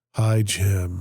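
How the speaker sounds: mock doom-laden, gloomy voice. Retelling how an elderly woman greeted him on calls, imitating a voice of doom. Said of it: "she's going to have the voice of doom".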